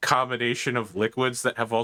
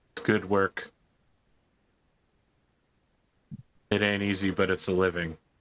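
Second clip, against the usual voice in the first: completely flat, unvaried monotone, lower pitch; 3 semitones lower than usual. Acting out a woman's reply to a question, completely monotone. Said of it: "she's delivering this all completely monotone".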